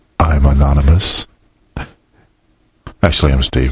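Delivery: dramatic, held pause.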